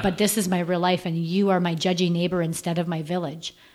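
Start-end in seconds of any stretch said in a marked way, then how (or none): none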